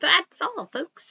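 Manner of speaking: clumsy cartoon pig impression. Showing the saying Porky says in a project: bad Porky Pig voice. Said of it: "I can't do Porky very well".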